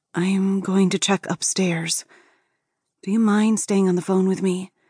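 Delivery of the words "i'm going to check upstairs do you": usual speaking voice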